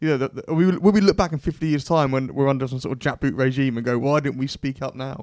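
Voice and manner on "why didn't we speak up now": ordinary talk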